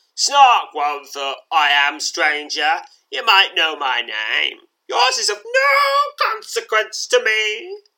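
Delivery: loud, swooping, sneering villain voice. Narrating a scene, voicing a scowling man who advances with a knife: sneering. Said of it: "he sneers".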